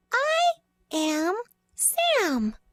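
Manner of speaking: high read-along reading voice, with a name drawn out. Reading a book aloud together with a listener: high voice. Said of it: "Use your high voice".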